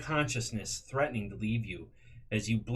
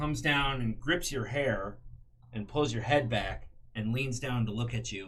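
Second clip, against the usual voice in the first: plain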